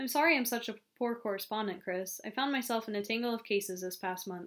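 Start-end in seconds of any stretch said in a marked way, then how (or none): none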